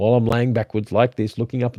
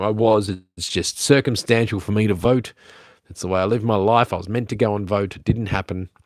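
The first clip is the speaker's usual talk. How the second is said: normal talking voice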